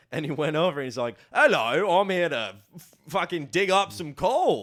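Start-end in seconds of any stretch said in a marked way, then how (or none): 1.3-4.6 high, loud fake English accent. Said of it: "dressed up as a ginger raw Englishman".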